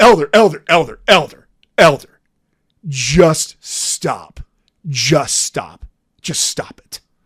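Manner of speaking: put-on mild outburst, thick with disgust, repeated, cut off. Retelling how a fellow member interrupted a lesson: imitating a loud disgusted voice. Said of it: "very loudly and disgustedly".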